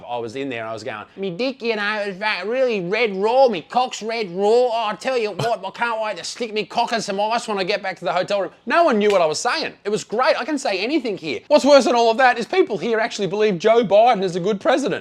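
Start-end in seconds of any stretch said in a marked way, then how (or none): 1.2-8.5 broad, cranked-up, exaggerated Australian accent. Speaker retelling what they said in the elevator, exaggerated Australian accent. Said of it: "I turned the Australian accent up to forty-five".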